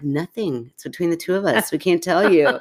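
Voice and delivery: ordinary talk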